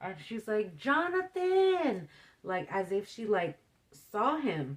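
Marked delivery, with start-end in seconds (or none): 0.8-2.1 mock very high, shrill, all-out, top-of-the-lungs yell. Retelling how a sister called out a name: imitating a yell at top of lungs. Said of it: "she yells, like, at the top of her lungs".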